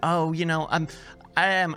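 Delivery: ordinary talk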